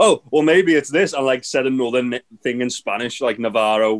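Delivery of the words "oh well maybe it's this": really angry, high-pitched voice. Retelling a match commentary moment, imitating an angry Jericho. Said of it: "Jericho got really angry and went".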